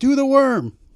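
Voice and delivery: high-pitched, loud yell like from a crowd. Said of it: "the guy in the audience yelling".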